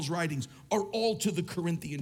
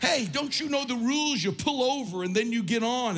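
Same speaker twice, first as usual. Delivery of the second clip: yelling, pitched up high; 6 semitones higher than usual. Recalling standing outside waving at cars from New Jersey, retelling yelling at cars. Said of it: "I'm yelling at cars".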